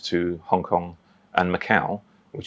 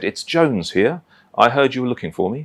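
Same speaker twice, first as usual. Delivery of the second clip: put-on high, quavering, tremulous old man's voice; 5 semitones higher, 3 dB louder than usual. Retelling a phone call from an old gentleman: imitating his tremulous voice. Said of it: "very tremulous voice".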